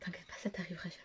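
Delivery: fast, teasing whisper.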